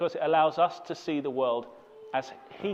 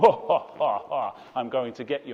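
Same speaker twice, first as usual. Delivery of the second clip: put-on laugh of a man; 3 semitones lower, 4 dB louder than usual. Retelling how a masked man on a tractor chased them: imitating a man laughing. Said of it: "he would laugh".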